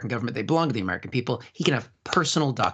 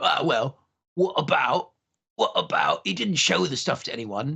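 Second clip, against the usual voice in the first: put-on Cockney accent. Voicing what skeptics watching would say, in a cockney accent. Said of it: "like a Cockney accent for an American Republican skeptic".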